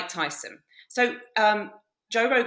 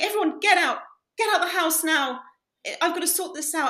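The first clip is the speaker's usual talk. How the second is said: weeping, tearful speech sobbing through the words; 8 semitones higher than usual. Retelling how a friend ordered everyone out: imitating someone crying. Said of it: "crying and going".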